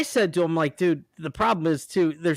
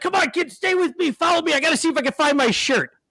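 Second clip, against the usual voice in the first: mock, very high-pitched, put-on yelling; 11 semitones higher, 3 dB louder than usual. Retelling a man in a store yelling at his two kids: imitating a man yelling at kids. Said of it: "he's yelling at him".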